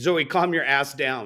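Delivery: ordinary delivery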